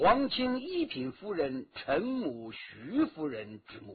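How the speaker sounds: plain reading voice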